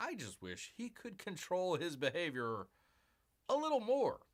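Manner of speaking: ordinary talk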